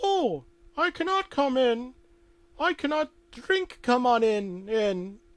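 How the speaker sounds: put-on loud, very high, squeaky girlish voice. Telling a made-up story, voicing a visitor at the door: high-pitched girly voice. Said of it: "That high-pitched girly voice again".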